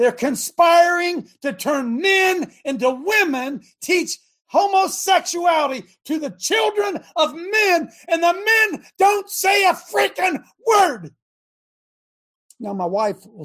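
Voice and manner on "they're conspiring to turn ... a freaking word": high, slow, deliberate, drawn-out yelling. Ranting to listeners about men who stay silent in church: yelling. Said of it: "Anybody want me to stop yelling?".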